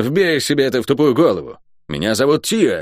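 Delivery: snapped, sharp, curt delivery. A woman answers the one who called her cursed, on the move; snapped. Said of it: "огрызнулась она на ходу".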